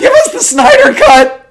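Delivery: put-on voice, very high, very loud and shrill. Discussing Superman fans, the speaker mimics them, imitating the fans. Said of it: "I like the voice you did there".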